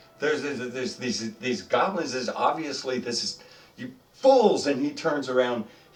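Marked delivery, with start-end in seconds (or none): 3.8-4.6 very high, loud, fed-up, exasperated scolding tone. Voicing the lead fighter turning on the adventurers: exasperated character voice. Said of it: "He seems exasperated".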